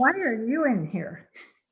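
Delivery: ordinary delivery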